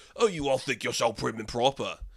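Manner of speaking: bad, terrible put-on Cockney accent. Retelling what Hoskins says in the movie: terrible Cockney accent. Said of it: "That was terrible Cockney".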